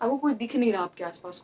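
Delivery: plain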